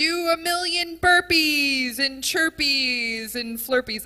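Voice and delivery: intense, high-pitched, loud yelling. Retelling a CrossFit class where the instructor was yelling at the class: imitating an instructor yelling. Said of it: "yelling at us".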